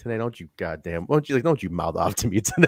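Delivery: half-swallowed angry grumbling mutter, almost under breath. Retelling an angry side comment: imitating someone muttering angrily. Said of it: "under his breath almost".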